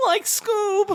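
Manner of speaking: very high cartoon drawl with the voice cracking. Trying out Shaggy calling to Scoob with another person, in a Shaggy voice with a voice crack. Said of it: "voice crack".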